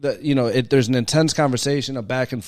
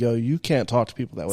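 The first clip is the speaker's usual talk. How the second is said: ordinary talk, nothing marked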